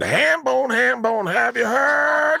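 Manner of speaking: very high, drawn-out, scratchy, creaky voice. Retelling something Leanne once said to the speaker, imitating Leanne. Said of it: "one time Leanne said to me".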